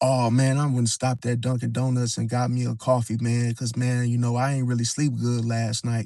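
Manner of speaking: mock-innocent nonchalant voice. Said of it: "it sounded so innocent and so just nonchalant".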